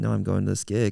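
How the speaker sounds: ordinary talk, nothing marked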